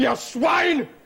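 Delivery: furious shouting. Arguing with Walter, who urges calm, furious shouting. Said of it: "I'm not shouting".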